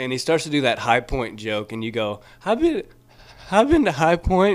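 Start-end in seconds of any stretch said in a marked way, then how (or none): 2.4-4.6 very high, halting, about-to-cry voice, acted out. Retelling another comic's line onstage: imitating someone about to cry. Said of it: "it came out like you were gonna start crying".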